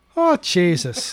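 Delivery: very deep, low, put-on Irish brogue. Podcast host who can't shake the accent, put-on Irish brogue. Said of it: "I can't shake it".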